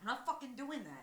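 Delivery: bristling, blunt, defensive tone. Retelling own refusal when asked to raise the voice, imitating past defensiveness. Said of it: "I was so defensive".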